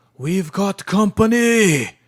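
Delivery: alarmed yell at full volume, very loud and high. In a role-play, Yorick spots a creature, Yorick yelling a warning. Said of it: "Yorick yells out".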